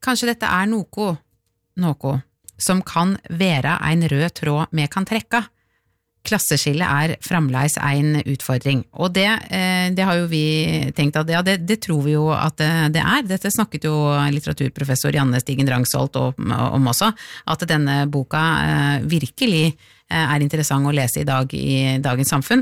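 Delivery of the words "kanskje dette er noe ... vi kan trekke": slow speech in Norwegian dialect. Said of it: "med, med min dialekt".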